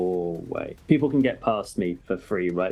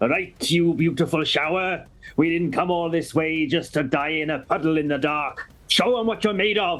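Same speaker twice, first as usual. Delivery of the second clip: booming voice, much higher; 7 semitones higher than usual. Playing a character on a game turn, speaking in a voice that booms out. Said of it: "in a voice that booms out".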